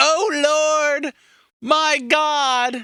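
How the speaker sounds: mock, high, very slow yell, "oh" stretched long. Retelling how Joseph Smith was shot, acting out his yell out the window. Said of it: "goes to the window and yells out the window".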